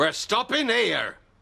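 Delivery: high-pitched yelling shout. A starving speaker tells Uncle Fred they are stopping here: shouting. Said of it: "Don't shout at me".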